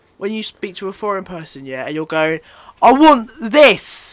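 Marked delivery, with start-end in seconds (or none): 2.8-4.1 very loud, high-pitched, almost shouting. Mocking how people talk to foreign people, shouting loudly. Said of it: "saying it louder".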